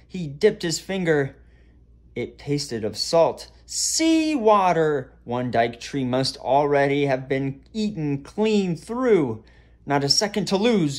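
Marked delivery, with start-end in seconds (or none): 9.8-11.0 gasped out, much higher pitch. Eric, finding sea water trickling down the alley, speaks, gasped. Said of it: "gasped Eric".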